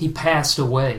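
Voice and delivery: ordinary talk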